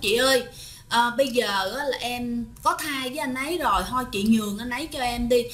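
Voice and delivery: ordinary talk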